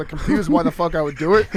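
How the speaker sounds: plain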